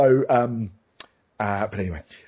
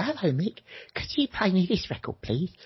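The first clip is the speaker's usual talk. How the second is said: put-on kid voice, much higher, quieter; 6 semitones higher, 6 dB quieter than usual. A former rock DJ retells kids phoning his show, imitating a kid caller. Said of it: "they used to ring in and go".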